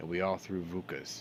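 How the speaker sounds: ordinary delivery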